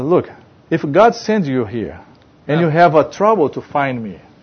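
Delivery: plain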